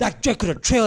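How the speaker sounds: high, loud yelling outburst. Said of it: "he's just yelling".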